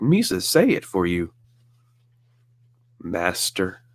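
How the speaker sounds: very slow, stretched out voice swooping up and down. Imagining a hallway exchange between two characters: imitating Jar Jar. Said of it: "And Jar Jar's like".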